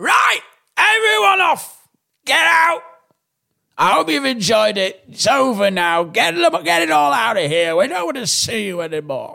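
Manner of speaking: put-on high, swooping drunken bellow. Imagining a drunk house owner on a balcony: imitating a drunk lord bellowing. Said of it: "coming out with a tannoy, drunk in the dressing gowns".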